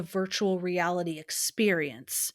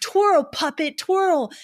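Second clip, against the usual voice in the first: crazed, slightly pitched-up voice; 9 semitones higher, 6 dB louder than usual. Retelling a film scene where Frank gets crazed: crazed Frank voice. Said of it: "Frank gets all crazed".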